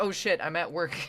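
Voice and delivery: acted, panic-stricken, sudden exclamation of alarm. Describing a man who sounded late for work; imitating a panicked man. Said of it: "He had that panic sound in his voice".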